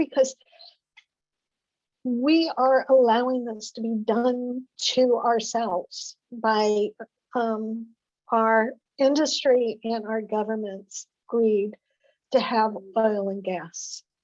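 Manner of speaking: slow, moved delivery with emotion in the voice. Speaker says she gets really emotional about this subject, speaking emotionally. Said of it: "I get really emotional with this".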